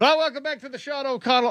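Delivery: fast, loud hollering. Imagining sitting among sports fans at Lumen Field, shouting into a phone. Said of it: "I'm just shouting into my phone".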